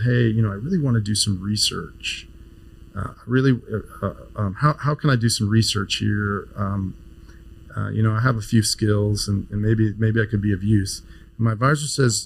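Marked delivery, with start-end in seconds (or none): none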